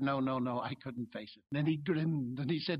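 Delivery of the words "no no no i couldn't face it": stammering, much lower and quieter. Recalling his answer to a former gulag prisoner's question; retelling own stammer. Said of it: "I stammered".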